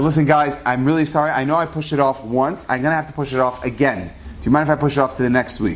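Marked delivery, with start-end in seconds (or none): none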